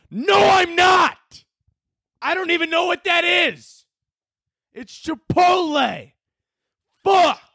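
irritated, high, drawn-out yelling. Irritated by what someone said, the speaker lashes out at the listeners, yelling. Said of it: "I feel bad for yelling at you guys".

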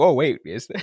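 mock sarcastic delivery. Repeating own earlier reply about good news: imitating own sarcastic reply. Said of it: "sarcastic about that".

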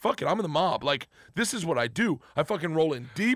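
plain

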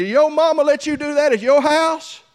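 high, loud holler. Retelling calling out to a boy climbing the wall: retelling own past holler. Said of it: "I hollered at him".

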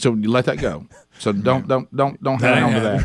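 normal talking voice

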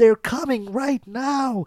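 put-on shrill, very high, all-out yelling. Reviewing an episode, acting out Carl on the shore, imitating Carl yelling. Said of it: "he is yelling at the top of his lungs".

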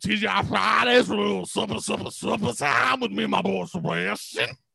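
put-on cartoon Southern drawl. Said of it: "What is this Foghord Leghorn's daughter?".

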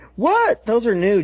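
put-on high-pitched, squeaky schoolgirl voice. A podcast co-host asks Tom whether he really said this; high-pitched schoolgirl voice. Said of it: "just like a high-pitched schoolgirl voice".

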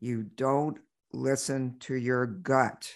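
loud voice. Telling of a voice that spoke to her, the speaker retells a loud voice. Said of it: "this voice that said to me so loudly".

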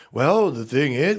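professorial lecturing tone. Mocking a candidate who talks like a professor to students: imitating Bernie Sanders as a professor. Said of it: "He goes".

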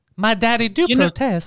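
very slow, put-on Southern drawl. Answering a question about the Southern Belle accent: put-on Southern Belle accent. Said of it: "That accent".

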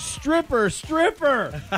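high-pitched, delighted squealing. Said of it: "squeal with delight, screaming".

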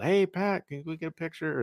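acted-out high, half-yelled call. Retelling a kid calling out for a picture: imitating someone yelling. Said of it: "who kinda yelled".

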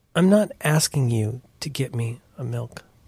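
slow, mournful, woeful, doleful voice. Retelling how a daughter turned during dinner: imitating a dolorous plea. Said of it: "like, dolorously and goes".

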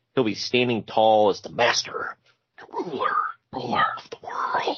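put-on creepy whisper. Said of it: "gotta whisper it, like, all creepy".

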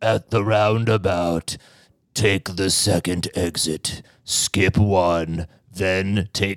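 undead zombie voice. A host recommends a navigation app's zombie voice and imitates it: Waze zombie voice. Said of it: "you have to use the zombie voice on Waze".

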